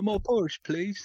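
very high, small, polite begging voice. Mocking how the other speaker sounded, as Oliver asking for more porridge. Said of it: "like you were in the movie Oliver, like you were waiting for more porridge".

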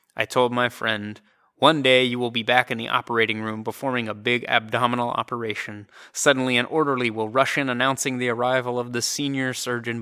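ordinary talk

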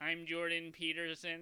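robotic monotone. Mocking a co-host's earlier impression, in a robotic Jordan Peterson impression. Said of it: "Sound like a robot".

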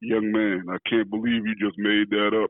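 large, low-pitched voice.

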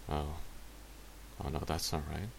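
breathy, hushed, whispered muttering. Moriarty talks to himself before turning to Marlowe; muttered to himself. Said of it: "he muttered to himself".

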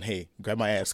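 ordinary talk, nothing marked

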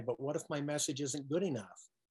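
ordinary talk

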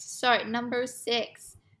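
brief, slipped-in American accent. Reading out the next item in a list, sounding American. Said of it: "I just sounded American".

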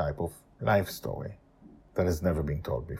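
plain

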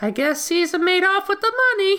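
airy, breathy voice pitched way up high. Recalling a favorite film scene, the speaker does a Jennifer Tilly impression. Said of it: "She has the best voice".

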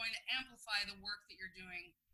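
quick, rushed, slightly too fast speech. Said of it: "talk a little too fast there".

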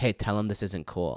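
hushed, secretive half-whisper. Retelling how Polly half-whispered a complaint in your ear: imitating Polly half-whispering. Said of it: "he'll whisper in your ear".

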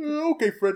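high cartoon sidekick voice. Saying a line on request: Barney Rubble voice. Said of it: "Great Barney Rubble".

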